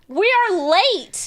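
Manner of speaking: annoyed, irritated tone. Retelling own words to a co-streamer about being late: imitating own annoyed self. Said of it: "I was so annoyed at her".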